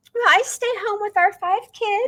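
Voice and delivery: perkiest possible voice, very high, chirpy. Retelling answering what she does at events: retelling own perkiest voice. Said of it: "in my perkiest possible voice".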